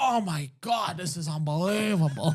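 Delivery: slow, drawn-out moan. Retelling Mark Lewis getting a massage at a strip club, imitating moaning. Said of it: "he was, like, moaning".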